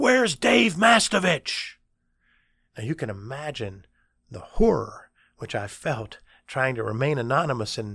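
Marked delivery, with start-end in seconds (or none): 0.0-1.8 sudden, loud, very high holler. Speaker retelling a man in class calling out his name: retelling a sudden yell. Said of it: "he just yells".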